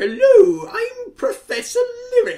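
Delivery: very high, slow character voice. Filling in for an absent Professor Lyric by doing his impression. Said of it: "I could try and do an impression of him".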